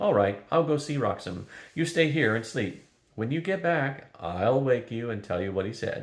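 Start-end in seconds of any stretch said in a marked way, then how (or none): none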